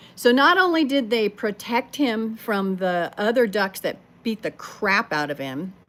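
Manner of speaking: normal talking voice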